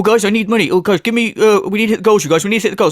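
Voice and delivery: mock needy, desperate, pleading tone. Imitating someone begging viewers for money: imitating desperate begging. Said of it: "All desperate".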